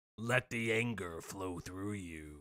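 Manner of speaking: odd grumbly voice, very deep and hushed. Goading another speaker to say it, in a weird grumbly voice. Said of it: "Now you're doing some weird grumbly stuff".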